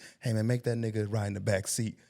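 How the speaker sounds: mock whispering. Retelling how the other speaker once whispered to someone else: imitating someone whispering. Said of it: "And you whispered to Ron G".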